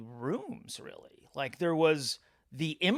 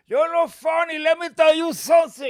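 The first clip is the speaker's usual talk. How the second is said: put-on shrill, very loud, high, drunken old Cuban voice; 12 semitones higher, 11 dB louder than usual. Retelling how a drunk heckler confronted him on stage: imitating an old Cuban heckler. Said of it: "this one old Cuban guy, he's like".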